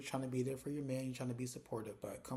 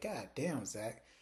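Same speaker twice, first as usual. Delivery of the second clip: ordinary talk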